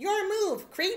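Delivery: tough-guy voice pitched far too high. Mimicking the game's version of the line: too-high RoboCop voice in the game. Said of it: "That's way too high".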